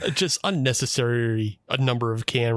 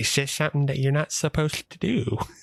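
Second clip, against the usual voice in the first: put-on, affected, creepy voice, slight lisp; 4 semitones higher than usual. Describing a man's lisp and affected creep, then imitating it: imitating a slight creepy lisp. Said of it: "a little bit of a lisp that like he has an affected creep to him".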